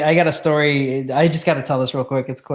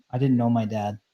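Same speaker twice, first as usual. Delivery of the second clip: put-on flat deadpan, quieter; 5 dB quieter than usual. Retelling answering a man who mocked them for not driving stick, deadpan. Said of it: "I looked him like deadpan".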